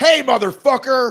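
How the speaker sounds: put-on yelling. Acting out a speakerphone caller as a power move: imitating someone yelling on speakerphone. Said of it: "if you were yelling".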